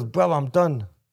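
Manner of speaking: play-acted, slightly cheeky, flippant, offhand. Quoting a guy after a fight against Kelberg, mimicking a cheeky tone. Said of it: "in the way he said it was like a bit of a cheeky way".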